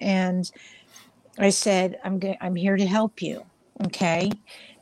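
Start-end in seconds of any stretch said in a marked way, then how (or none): 2.0-4.3 soft, calm, kind, soothing and gentle voice. Retelling calming a hyperventilating teenage boy: retelling own soft, calm, kind voice. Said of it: "I talked to him very kindly, very softly, and very calmly".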